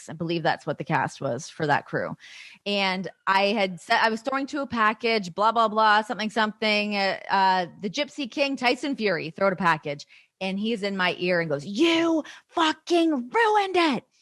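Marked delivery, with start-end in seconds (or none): 11.7-14.0 mock screaming, high and slow, drawn out. Retelling how he screamed in my ear about a segment, imitating someone screaming. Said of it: "Screaming at me".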